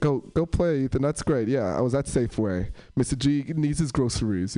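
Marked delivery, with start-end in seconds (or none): none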